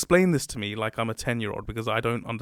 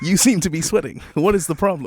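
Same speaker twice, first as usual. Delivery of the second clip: high, raised robotic machine voice; 5 semitones higher, 7 dB louder than usual. Acting out a robot boss calling an employee into the office: playing Mika, the robot boss. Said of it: "I'll be Mika".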